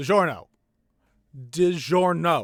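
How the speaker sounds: yelling out. Narrating a game scene, the narrator voices a character yelling out. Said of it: "actually just yells out".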